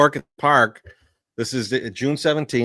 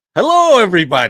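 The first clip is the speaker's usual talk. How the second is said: voice pitched up and called out; 5 semitones higher, 7 dB louder than usual. Showing a Doctor Nick from The Simpsons voice: Doctor Nick voice. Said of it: "Doctor Nick from The Simpsons voice".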